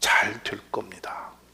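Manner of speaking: soft, slow, hushed, whispered, reassuring tone.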